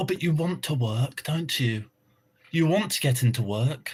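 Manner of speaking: airy radio-presenter voice, words floated out. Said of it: "she always has that airy fucking voice".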